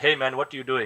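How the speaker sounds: put-on Indian accent. Speaker imitates how a friend talks, imitating friend's indian accent. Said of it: "he talks like this".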